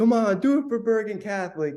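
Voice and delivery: high, all-out scream at the top of the lungs. Retelling a friend shouting at lessons on the field: imitating Matt Sims screaming. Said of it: "Matt screams at the top of his lungs".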